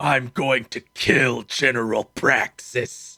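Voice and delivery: mock deep, dropped, growling snarl. Talking about a game's mascot, quoting his first line: Jak's snarl, retold. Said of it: "He snarls".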